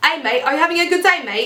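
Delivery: clumsy put-on Australian accent. Speaker admits they can't really do it, then tries: bad imitated Australian accent. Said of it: "that's my Australian accent".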